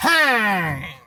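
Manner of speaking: loud, high, stretched-out baseball umpire call. Showing how the timekeeper should call time: baseball umpire call. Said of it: "I want you to do it like a baseball umpire".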